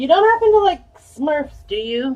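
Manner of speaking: high, mock-innocent sarcastic tone. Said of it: "That's obviously meant sarcastically".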